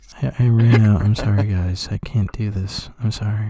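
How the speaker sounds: acted sad-sounding voice. Retelling a player's apology for running out of touchdowns, imitating a sad-sounding voice. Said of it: "it was so, like, sad sounding".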